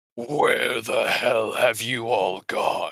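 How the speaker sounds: terrible, monstrous voice. Narrator voicing a voice in the party's minds, monstrous echoing psionic voice. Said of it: "a terrible, monstrous, psionic voice echoing".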